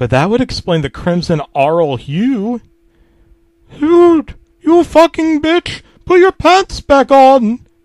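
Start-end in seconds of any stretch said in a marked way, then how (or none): 3.8-7.6 very high, screeching, shrieked outburst. Narrator voicing the app's outburst at the narrator: shrieking. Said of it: "Duolingo shrieked at me".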